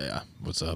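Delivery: deep, dropped an octave, hushed near-whisper. Showing how own voice would sound processed: voice an octave lower. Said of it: "an octave lower".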